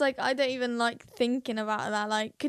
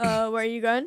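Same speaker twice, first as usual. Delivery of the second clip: put-on awkward, uncomfortable voice; 2 semitones lower than usual. Retelling how the brother reacted to an outfit: imitating Leo sounding uncomfortable. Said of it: "He's so uncomfortable".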